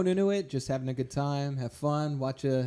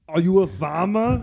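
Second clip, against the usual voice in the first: very loud, slow, pitched-up bellow; 5 semitones higher, 9 dB louder than usual. Answering a request to do Arnold Schwarzenegger: Arnold Schwarzenegger impression. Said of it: "do your, uh, Arnold Schwarzenegger".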